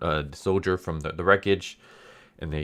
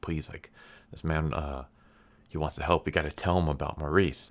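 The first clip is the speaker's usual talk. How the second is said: mock-pleading, much quieter; 5 dB quieter than usual. Retelling a story, the speaker acts out one character begging another. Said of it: "he's like begging Ophelia".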